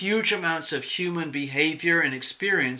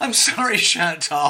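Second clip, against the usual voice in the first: speech breaking into giggles, laughing through; 3 semitones higher, 4 dB louder than usual. Reacting to a question being read out: laughing while talking. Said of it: "I don't know why I'm laughing".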